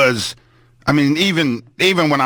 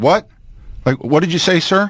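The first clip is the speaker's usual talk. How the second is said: put-on sweet, real nice, polite voice; 3 semitones higher than usual. Retelling questioning a guard while stepping closer: imitating a real nice voice. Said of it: "in a real nice voice".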